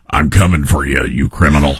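very low, deep, gravelly tough cop voice. Imitating a sheriff candidate threatening criminals: imitating Brad Less's gravelly voice. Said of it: "the gravelly voice".

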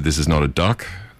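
ordinary talk

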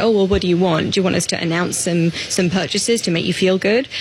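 normal talking voice

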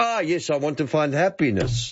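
put-on Mexican accent, relieved. Retelling an old gag from memory, in a Mexican accent. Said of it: "in that beautiful Mexican accent".

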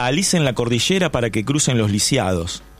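ordinary talk

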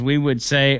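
ordinary delivery

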